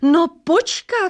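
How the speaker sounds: very high, roaring crowd-like call. Someone in the waiting crowd cuts in on the typist, roaring. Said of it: "zařval někdo".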